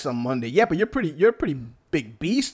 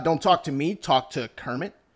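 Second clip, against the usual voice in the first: plain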